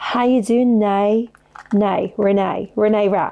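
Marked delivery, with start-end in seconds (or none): 0.0-1.3 attempted put-on Australian accent. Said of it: "Is that Australian, maybe?".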